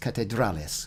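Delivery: catedrales stressed on second-to-last syllable dra. Practicing Spanish pronunciation, stress on dra in catedrales. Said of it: "second to last syllable".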